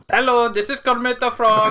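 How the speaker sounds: put-on Indian-sounding accent. Taking up a challenge to impersonate, doing a Kermit the Frog impression with an Indian-sounding accent. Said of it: "that's tikka masala".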